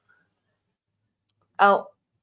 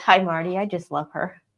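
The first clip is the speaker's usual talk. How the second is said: ordinary delivery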